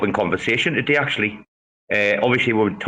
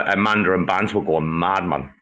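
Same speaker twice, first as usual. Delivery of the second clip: ordinary talk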